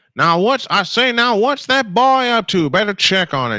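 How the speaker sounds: high cartoon rooster impression. Calling a baseball game, he tries a Looney Tunes impression: Foghorn Leghorn impression. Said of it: "Let me see if I can do an impression of that".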